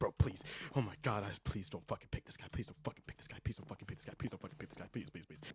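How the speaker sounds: hushed, breathy, whispered pleading, repeated over and over. Confessing to Proper how he begged others not to pick him, mock begging. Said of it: "Like I was literally begging".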